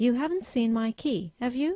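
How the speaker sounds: pitch rises on have you. Teaching question tags in yes-no questions, rising on the tag have you. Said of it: "you have to use a rising intonation".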